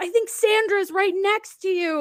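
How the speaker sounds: high, loud, chirpy announcing voice.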